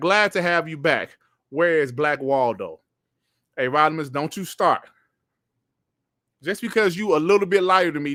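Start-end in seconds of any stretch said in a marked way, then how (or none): none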